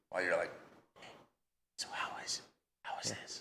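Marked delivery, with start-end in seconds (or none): 1.7-3.4 whispered voice, quieter. Retelling talks with the kids while hunting: imitating a whisper. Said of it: "but you're whispering".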